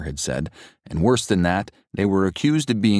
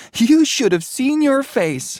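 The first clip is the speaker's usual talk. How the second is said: shrill, loud, very high giggling, teasing; 5 dB louder than usual. Reading Mary speaking to Jonathan, giggling. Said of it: "she giggled".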